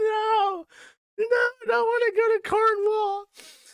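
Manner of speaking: put-on, very high, drawn-out blubbering wail. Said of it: "He's like".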